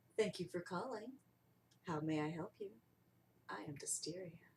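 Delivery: sultry, sexy, seductive phone voice. Role-playing answering a customer's phone call, sexy voice. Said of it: "that's when the sexy voice comes out".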